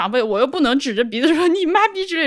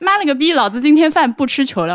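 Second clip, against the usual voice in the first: ordinary delivery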